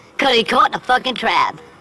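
ordinary delivery

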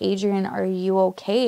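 ordinary delivery

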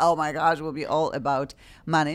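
ordinary talk, nothing marked

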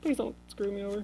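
mock desperate, pleading tone. Imitating a game opponent who just said please work: desperate plea. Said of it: "She sounds so desperate".

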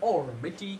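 put-on pirate accent and voice. Testing whether they can manage it, launching into a pirate voice. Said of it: "Wonder if I can do a pirate voice".

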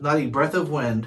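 ordinary delivery

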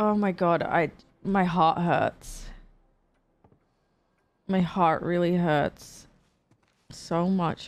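trying not to cry, choking back tears. Streamer reacting while playing a game, trying not to cry. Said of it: "I'm trying not to cry".

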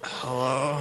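soft, sleepy, groggy.

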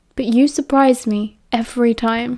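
ordinary delivery

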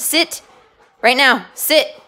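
stern, firm, forceful tone. Training the dog Buddy, telling him to sit in a firm commanding voice. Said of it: "You have to use a firm voice".

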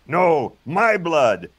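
put-on Icelandic accent. Recounting a film scene, voicing Raven Dark's reply to Max, bad Icelandic accent. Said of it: "That's a terrible accent".

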